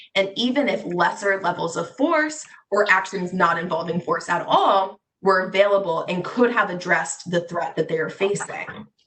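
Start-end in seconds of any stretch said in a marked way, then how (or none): none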